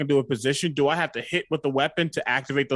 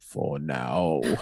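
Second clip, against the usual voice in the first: low half-whisper under the breath, to oneself; 12 semitones lower, 4 dB quieter than usual. In a scene, a character answers a boast about Hector: half-whispered under breath. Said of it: "they just whisper under their breath".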